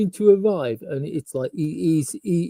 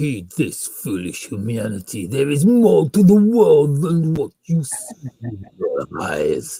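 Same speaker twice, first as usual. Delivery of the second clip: put-on deep, swooping fantasy demon voice; 5 semitones lower than usual. Describing a show's opening of flames and music, the speaker does a demon voice. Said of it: "Demon voice".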